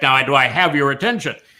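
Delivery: really strong, intense, bold delivery. Showing how spoken delivery can demand attention, going really bold. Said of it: "really bold".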